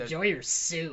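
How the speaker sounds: put-on mean voice. Retelling what she said as the call ended, imitating a mean tone. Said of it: "there's some meanness. She was like".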